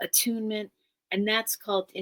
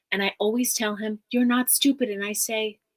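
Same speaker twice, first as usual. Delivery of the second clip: normal talking voice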